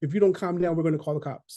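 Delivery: ordinary talk, nothing marked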